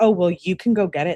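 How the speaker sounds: ordinary delivery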